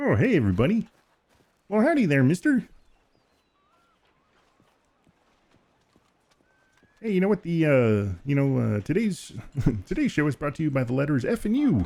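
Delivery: chipper, swooping, cheery frog puppet voice. While playing Fortnite and showing off voices, doing a Kermit the Frog voice. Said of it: "pretend the Kermit voice".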